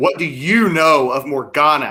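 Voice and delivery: severe, stern, commanding, loud and deliberate. Narrating a scene, voicing Lassard's question to Winslow, in a stern voice. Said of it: "in a stern voice".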